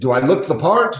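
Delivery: put-on Irish brogue accent. Retelling what an airport worker in ireland said: irish accent. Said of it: "with the Irish accent".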